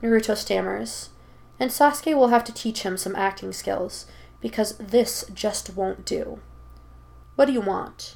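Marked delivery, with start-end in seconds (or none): 7.3-8.1 lazy, uninterested, bored drawl. A character answers a stammered greeting, drawled, sounding bored. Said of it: "He drawls out, sounding bored".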